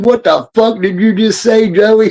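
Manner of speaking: high confrontational voice. Describing what came to mind, doing a Robert De Niro line. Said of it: "Robert De Niro leaning forward saying".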